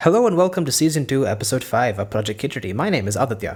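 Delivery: stiff formal announcer voice, as if reading. Opening a podcast episode: stiff announcer voice, as if reading a script. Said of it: "you literally spoke as if you were reading off of something".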